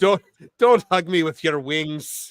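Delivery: attempted Irish accent sounding Scottish. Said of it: "Irish, but it's coming out Scottish".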